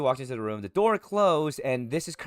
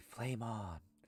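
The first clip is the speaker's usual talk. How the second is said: very quiet, very faint, barely audible; 3 semitones lower, 17 dB quieter than usual. A figure made of flames speaking as the players approach, very faintly. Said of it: "he does say very faintly".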